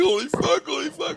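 put-on, very high-pitched sobbing outburst. Retelling how another man reacted to the story: imitating someone crying. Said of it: "he's fucking crying".

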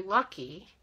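the word lucky stressed. Talking about overspending on yarn, stressing the word lucky. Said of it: "emphasis on lucky".

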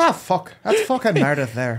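a little Irish accent, sing-song. Saying a name the way it sounds to them: a little Irish accent. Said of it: "Mine's a little Irish".

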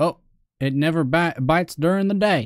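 fake accent of the American South. Speaker talking to a fish, in a put-on southern accent. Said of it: "I decided to take on a southern accent".

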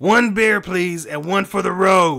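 very loud, high-pitched shouting. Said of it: "He yells at the bartender".

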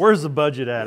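normal talking voice

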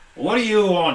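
cross, annoyed workman voice, loud and angry. A character turns and looks at you, speaking as an angry Bob the Builder. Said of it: "he's an angry Bob the Builder".

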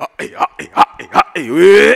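loud vocal screams in bursts, syllable by syllable.

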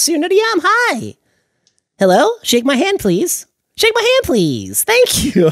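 very high, squeaky, shrill, eager, pleading voice. Like a squeaky little character pushing himself on everyone he meets, eagerly thrusting out a hand and asking politely. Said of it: "He's very high".

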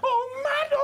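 frantic woman's voice, high laughing-crying wail.

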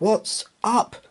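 gasping. Hearing strange howling in the mist, the mate asks the skipper: gasped. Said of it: "gasped the mate".

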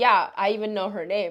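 ordinary talk

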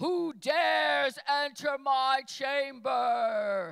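very loud, very slow, booming wizard bellow. Describing how God's voice sounds, imitating Oz booming behind the curtain. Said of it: "the great and mighty Oz behind the curtain booms".

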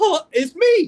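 put-on very high little-girl squeak, loud, cracking. Retelling when the man finally answered the phone, imitating own voice cracking. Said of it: "my voice cracked".

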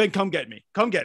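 put-on fed-up, frustrated, exhausted and worn-out. Retelling getting frustrated with a lifeguard while swimming: imitating own past frustration. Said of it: "I'm get frustrated. I just go".

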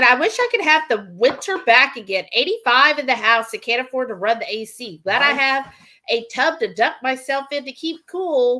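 ordinary talk

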